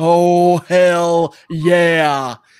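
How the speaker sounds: wrestler-style, ring-style delivery. Answering a request for a hell yeah: Stone Cold impression. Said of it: "That's my best Stone Cold impression".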